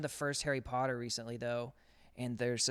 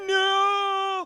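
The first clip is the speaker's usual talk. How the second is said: very loud, very high-pitched, drawn-out shriek; 9 dB louder than usual. Retelling a film trailer scream: imitating Voldemort's scream. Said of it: "Voldemort does this scream in it".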